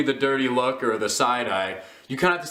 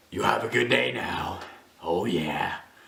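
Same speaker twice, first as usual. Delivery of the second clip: put-on low, rough, raspy, rusty old voice; 6 semitones lower, 4 dB quieter than usual. Retelling a movie scene of a man walking away: rusty old Clint Eastwood voice. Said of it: "talk like a rusty old Clint Eastwood".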